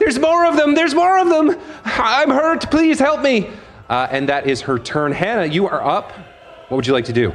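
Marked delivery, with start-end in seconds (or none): 0.0-3.5 very high, frantic, panicked screaming. Voicing a hurt guard backing away from a swarm: screaming while backing away. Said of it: "kind of screaming as she goes".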